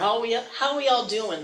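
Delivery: slow, drawn-out Pittsburgh accent, like a local. Greeting the audience after promising to talk like a true Pittsburgher: Pittsburgh accent. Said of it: "say it like a true Pittsburgher".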